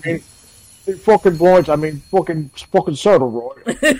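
put-on British actor voice. Doing an impression from Peaky Blinders after saying it's the only one he can do: Tom Hardy impression. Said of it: "Tom Hardy from Peaky Blinders".

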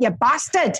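put-on Newcastle Geordie accent. Showing how swearing sounds in a geordie accent. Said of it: "Geordie's like".

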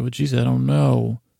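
ordinary talk

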